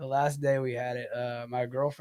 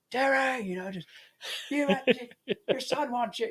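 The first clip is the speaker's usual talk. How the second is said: mock yelling, much higher, slower; 11 semitones higher than usual. Retelling how his mom yelled at his dad about their son, imitating her yelling. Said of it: "my mom like yells at my dad".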